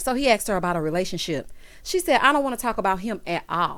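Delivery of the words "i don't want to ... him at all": ordinary talk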